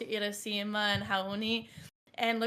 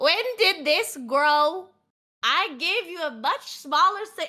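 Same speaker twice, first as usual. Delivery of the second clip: put-on elderly man's slow, drawn-out voice; 6 semitones higher, 7 dB louder than usual. Voicing an old man in a group scene: old man's voice. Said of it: "pierced by this old man's voice".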